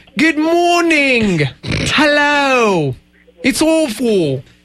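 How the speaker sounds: awful put-on British accent. Asked by others to try the accent, greeting them in a bad put-on British accent. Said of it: "Show me. Try. I want to hear".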